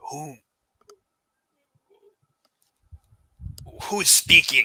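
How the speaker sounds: rough, wild-edged rasp. Describing what the listener hears, voicing an unseen figure in a raspy voice. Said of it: "you hear a raspy voice saying".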